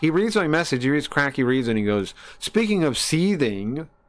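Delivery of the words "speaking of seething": nasty, mean, evil-sounding villainous delivery. Retelling what a streamer said when reading a chat message: imitating someone sounding mean. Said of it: "comes off really mean and evil immediately".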